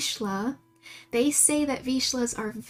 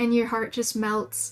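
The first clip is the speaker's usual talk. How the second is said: ordinary talk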